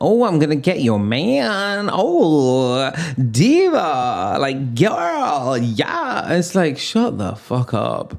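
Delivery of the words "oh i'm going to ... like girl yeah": slow, fake American accent with drawn-out "oh". Mocking people who talk in a put-on American accent. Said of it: "stop doing the American accent".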